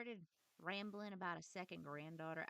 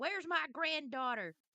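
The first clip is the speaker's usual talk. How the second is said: put-on very loud, very high, shrill grandpa voice, hollering; 10 semitones higher, 12 dB louder than usual. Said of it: "continuing to yell at you".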